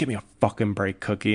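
usual speaking voice

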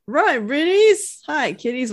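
bad, clumsy cartoon dog voice. Describing a cartoon where Scooby waves to the kids, bad Scooby-Doo impression. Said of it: "that didn't even sound like Scooby".

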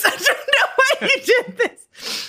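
high-pitched laugh of disbelief.

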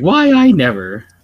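put-on scandalized, shocked old-lady outburst. Describing how he'd play a grandma, imitating the old lady from The Simpsons. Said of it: "the old lady from The Simpsons".

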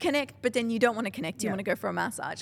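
plain

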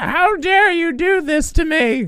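very high, put-on older mom voice. Explaining the mom voice they have to do, demonstrating it: older mom voice. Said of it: "that's the mom voice I have to do".

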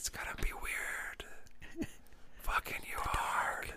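whispered voice. Quoting a movie character's line during lovemaking: imitating a whisper. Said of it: "they actually whisper that part".

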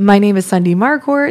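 question-like rising upswing at the end of Marcourt. Introducing oneself by name, rising end like a question.

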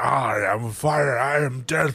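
very slow, drawn-out, word-by-word delivery. Retelling a movie scene where the dragon escapes: imitating Smaug cursing everybody. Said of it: "He's like, ... cursing everybody".

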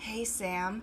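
smooth, swaggy put-on voice. Retelling how Greg waltzes in and greets people: smooth, swaggy Greg impression. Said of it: "So smooth".

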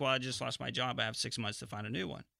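ordinary talk

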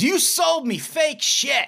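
play-acted piercing shout, very high and shrill. Retelling how a buyer ran out of a bar: imitating someone yelling. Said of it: "comes running out of the bar and yells".

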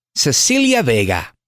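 slow, drawn-out lottery-announcer style delivery. Recalling a New York journalist who read the lotto numbers: imitating Yolanda Vega. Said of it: "she would say".

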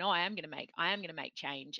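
normal talking voice

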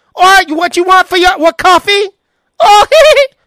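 put-on shrill, very high, very loud dim girl voice. Speaker shows how a girl with a hickey sounds in his head: stupid gangbanger girl voice. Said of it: "They sound something like this".

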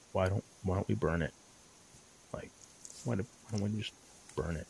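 small, very quiet, low voice. Speaker retelling a suggestion from someone in the shelter, imitating a small voice. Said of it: "a small voice come from the shelter going".

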